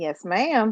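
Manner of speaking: dutiful-sounding, flat, unexcited tone with no enthusiasm. Asked if ready to break down this year's movies, replying sounding unexcited. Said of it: "You don't sound that excited".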